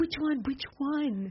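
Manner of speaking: high, hushed half-whisper, repeated over and over. Retelling how Mom asked about the phone call: imitating someone half-whispering. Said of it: "she's whispering to me".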